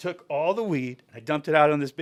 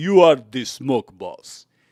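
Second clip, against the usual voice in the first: deliberate put-on Czech accent, loud and slow; 3 semitones lower, 7 dB louder than usual. Retelling what a smoker said to them: imitating a Czech accent. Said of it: "The Czech ac-".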